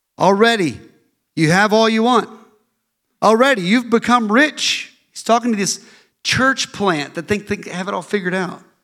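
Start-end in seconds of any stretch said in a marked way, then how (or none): 0.2-4.9 mocking, needling, sarcastic reading. Reading a Bible passage aloud, imitating sarcastic Paul. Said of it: "you get to hear how sarcastic Paul is".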